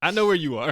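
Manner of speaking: high, loud, incredulous, mocking, exasperated yell.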